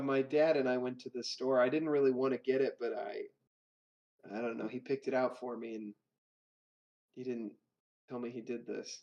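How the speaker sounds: choked-up, voice catching with emotion. Telling the others who picked out the broom, getting emotional. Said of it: "I'm getting all emotional".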